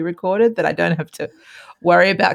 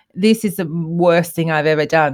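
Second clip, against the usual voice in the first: usual speaking voice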